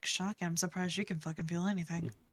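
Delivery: soft, muttered aside under the breath. Player voicing Sahira, eyes on everything around her, muttering under her breath. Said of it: "she just mutters".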